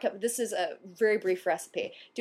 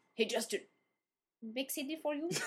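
put-on Chinese accent, higher, quieter; 4 semitones higher, 10 dB quieter than usual. Speaker repeats a co-host's line back to him, in a mock Chinese accent. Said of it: "Was that a Chinese impression?".

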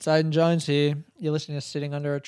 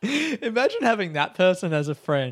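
ordinary talk, nothing marked

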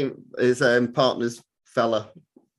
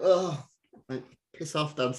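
very slow speech with drawn-out, dragged words; 3 semitones higher, 5 dB quieter than usual. Retelling how Harry answers when woken in the morning: imitating Harry. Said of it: "And you're like".

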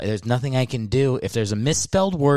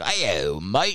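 put-on Australian accent across the whole voice; 3 semitones lower, 3 dB quieter than usual. Retelling how a podcast host greets him: imitating an Australian accent. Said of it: "he's got that whole voice".

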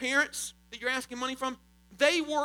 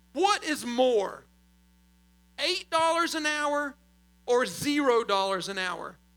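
speaking very slowly. Speaking to the audience, posing a mathematical question: very slow. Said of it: "so I'll talk very slowly during this question".

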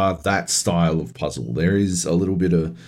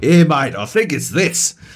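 put-on matey Australian accent, pitched up; 7 semitones higher, 4 dB louder than usual. Retelling a two a m call to a london number: imitating an aussie caller.

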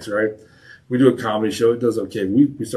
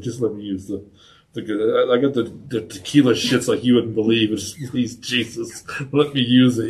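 ordinary delivery

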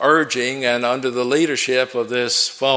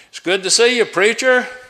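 very loud, booming announcing voice; 10 semitones higher, 4 dB louder than usual. Retelling the barber greeting him at the barbershop door, in a very loud voice. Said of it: "said in a very loud voice".

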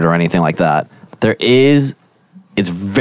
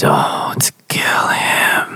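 whispery, ghostly, otherworldly voice. Describing a voice heard from the background of existence, in a whispery voice. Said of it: "It's just kind of whispery".

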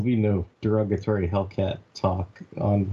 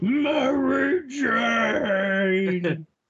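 very high, full-throated cartoon superhero shout; 14 semitones higher than usual. Imitating the cartoon Spider-Man yelling: Spider-Man cartoon shout. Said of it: "Goddamn, Greg Brady. How did you do that".

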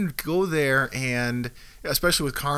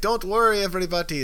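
bad put-on Jamaican accent, pitched higher; 5 semitones higher than usual. Retelling the cruise director addressing everybody, in a terrible jamaican accent. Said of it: "That's my terrible Jamaican accent".

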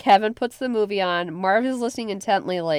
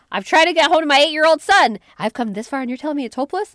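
put-on angry yelling, higher and louder; 7 semitones higher, 6 dB louder than usual. Acting out a tired mother's rant at an airline desk: imitating Kate yelling. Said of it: "And she starts yelling".

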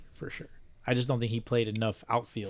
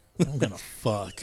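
playful put-on seductive, sultry tone. Repeating a joking line back to another speaker: mock seductive tone. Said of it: "You said that so, like, seductively".

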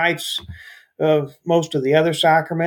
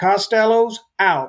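loud, declaiming voice; 4 semitones higher than usual. Speaker retells a man standing up in church to address his wife: retelling a loud declaration. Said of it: "in a loud voice".

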